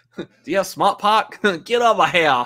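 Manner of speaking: put-on Boston accent. Speaker doing a bit with another speaker, in a Boston accent. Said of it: "every time like we try to do a Boston accent".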